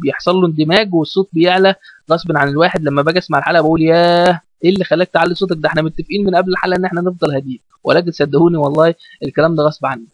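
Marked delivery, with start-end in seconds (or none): none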